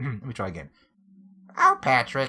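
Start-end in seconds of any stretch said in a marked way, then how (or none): 1.6-2.3 loud, clumsy, bad put-on cartoon character voice. Trying the SpongeBob voice a second time, SpongeBob voice. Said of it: "It's certainly not the same as my regular voice".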